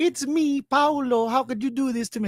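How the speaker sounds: bad, exaggerated fake Italian accent, pitched high. Mocking an actor's role, imitating his Mario-like accent. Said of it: "doing an awful Super Mario impression".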